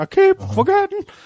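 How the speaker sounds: wavering, very high-pitched, warbly voice. Retelling what a man said when he came in: warbly high-pitched voice. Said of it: "his warbly, like, high-pitched voice".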